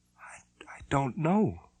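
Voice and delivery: tiny voice, very high pitch and very slow. Narrating a story, a woman answers the man leaning over her, in a small voice. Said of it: "she said in a small voice".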